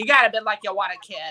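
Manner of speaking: put-on old-time forties gangster manner of talking. Quoting Judy Reardon, making her sound like a forties mobster. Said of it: "I make her sound like like a forties mobster".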